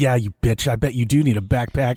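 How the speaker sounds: mock angry, raging griping. Retelling how she bitches at a game character: imitating someone raging at a game. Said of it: "where is this rage".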